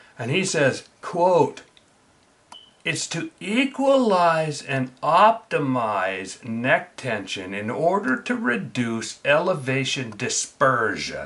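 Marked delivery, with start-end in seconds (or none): 2.9-11.3 slow, deliberate, carefully spelled-out delivery. Quoting an expert's article to the listeners, the speaker is speaking slowly. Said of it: "I said that slow so that you".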